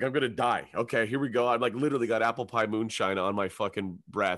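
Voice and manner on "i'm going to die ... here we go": plain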